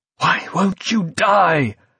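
high, slow, gasped-out words in stunned disbelief. Creedy, his gun empty, faces v still coming at him; gasping in disbelief. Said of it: "gasped Creedy in disbelief".

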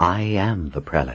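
ordinary delivery, nothing marked

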